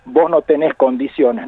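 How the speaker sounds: usual speaking voice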